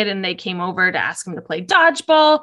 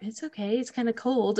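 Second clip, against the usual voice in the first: put-on awkward boyish speech, quieter; 2 semitones higher, 9 dB quieter than usual. Retelling a scene where a boy answers a girl: imitating an awkward boy. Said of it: "in the most awkward boy fashion".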